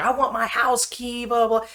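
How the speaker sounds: very high, shrill, raging, furious scream. Recounting a woman who rolled down her window at a man, retelling her screaming. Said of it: "She's screaming".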